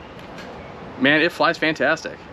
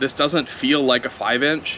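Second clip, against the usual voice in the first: plain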